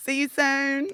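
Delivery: put-on English accent. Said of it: "I adapt their accent to me".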